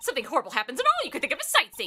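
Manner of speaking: plain reading voice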